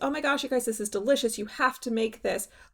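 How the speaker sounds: fast, mock excited, gushing delivery. Imitating a reviewer's first review mode: imitating her gushing review. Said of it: "Either she tries it and she goes".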